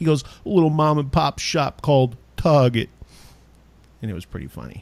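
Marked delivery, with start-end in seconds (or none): 0.2-2.9 put-on cliched New York accent. Retelling a man's bit asking chain stores for things, stupid New York voice. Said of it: "in that stupid like New York voice".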